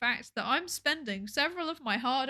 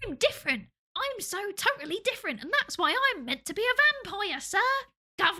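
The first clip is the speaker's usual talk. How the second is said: put-on pitched-up street-urchin British accent; 8 semitones higher, 3 dB louder than usual. Retelling the story, the speaker voices Bella Swan in a British accent. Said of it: "apparently Bella Swan is now Oliver Twist".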